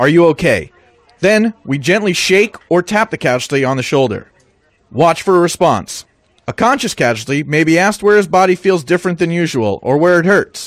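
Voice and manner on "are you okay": loud but calm voice. Showing how to check a casualty in shake and shout: loud but calm voice. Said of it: "ask in a loud but calm voice".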